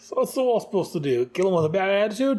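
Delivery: exaggerated fake Aussie accent. Retelling the scene's dialogue, voicing Boomerang after Lashina speaks, in a bad Australian Boomerang accent. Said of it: "my horrible Australian accent".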